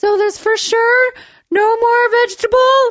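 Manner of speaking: very high, unhinged-sounding, drawn out. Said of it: "my voice was like that".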